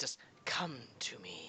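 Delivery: hissed voice. Narrating a game scene, voicing a voice the players hear, hissing. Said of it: "hear a voice hiss out".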